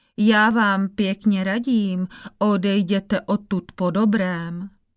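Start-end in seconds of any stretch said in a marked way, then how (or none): none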